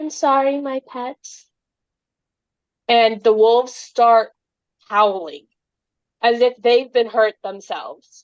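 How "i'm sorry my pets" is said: faint, slow, high last-breath dying half-whisper. Voicing a dying character's last words to her wolves: dying half-whisper. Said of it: "there's a small little whisper".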